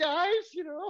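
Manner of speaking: very high, squeaky, high-pitched put-on voice. Mimicking the voice he ended up always doing, in a really high-pitched voice. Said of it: "This really high pitch voice".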